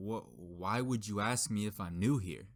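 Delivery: put-on prickly, defensive, offended, taken-aback tone. Retelling a sandwich maker's reply to a customer's question, retelling a defensive reply. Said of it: "he says really defensively".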